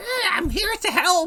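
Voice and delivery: shrill, very high, yelping goblin voice. Voicing a goblin running out of a dark corner: yelping goblin voice. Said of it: "he's, like, yelping and".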